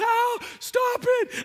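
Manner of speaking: play-acted very high, shrill scream of agony. Recounting being hit on the bottom, quoting his past self: acting out screaming in pain. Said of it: "I'm screaming in pain".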